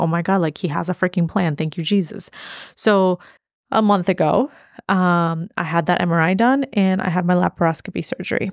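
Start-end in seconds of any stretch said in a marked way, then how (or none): none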